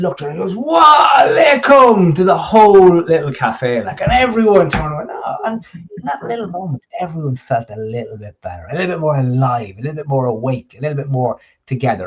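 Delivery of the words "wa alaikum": booming, very loud, high-pitched delivery. Retelling how a man greeted the whole cafe, in a booming voice. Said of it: "his booming voice".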